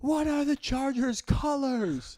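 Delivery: very high, stretched-out, drawn-out yelling. Retelling how he kept interrupting a conversation: imitating someone yelling. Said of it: "he keeps yelling at me, like".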